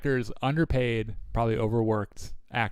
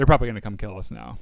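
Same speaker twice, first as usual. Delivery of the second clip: normal talking voice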